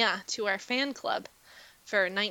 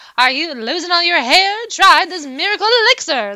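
vintage 1940s radio ad announcer voice; 9 semitones higher, 16 dB louder than usual. Speaker showing off their vintage announcer voice with an old ad, 1940s radio announcer voice. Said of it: "1940s radio announcer".

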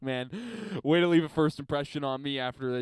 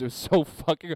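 ordinary delivery

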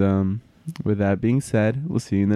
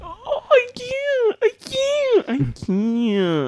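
very high, very slow, drawn-out tearful sobbing words. Wrapping up after everyone broke down crying: crying while talking. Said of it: "I'm still crying".

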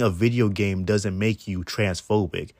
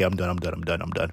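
ordinary talk

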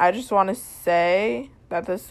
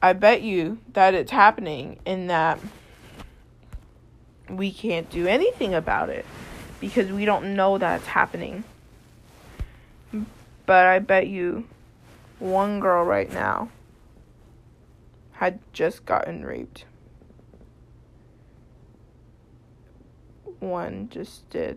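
struggling not to cry, holding back tears. Speaking to listeners mid-monologue, holding back tears. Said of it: "I'm trying so hard not to cry".

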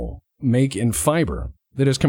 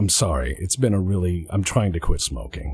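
heavy sigh with voice dropped low; 6 semitones lower than usual. Retelling what a woman said after she sighs, as a retold sighing reply. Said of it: "And then she sighs and goes".

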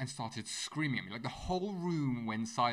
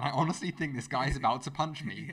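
ordinary talk

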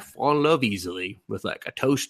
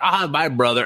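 put-on talking with mouth full, higher; 4 semitones higher than usual. Imitating an annoying little sister character who is always eating: imitating talking with mouth full. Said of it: "she always has fucking food in her mouth".

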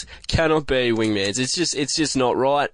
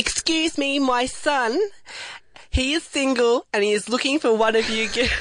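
put-on voice, pitched very high; 12 semitones higher than usual. A mum in a studio announces her son is single, doing it properly in a put-on voice. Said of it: "I've got to get into a voice".

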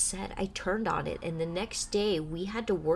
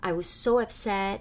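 normal talking voice

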